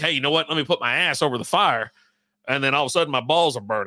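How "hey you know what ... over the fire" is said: put-on drunken speech. Retelling what they say by the fire: imitating own drunk self. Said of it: "my drunk ass be like".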